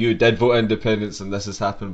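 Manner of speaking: ordinary talk, nothing marked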